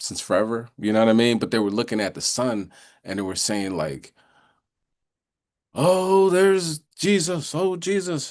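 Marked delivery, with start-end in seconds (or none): 5.7-8.3 very high, very slow, drawn-out, top-of-lungs scream. Retelling people in the woods shouting at the sun: imitating people screaming. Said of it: "screaming at the top of their lungs".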